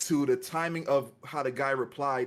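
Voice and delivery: normal talking voice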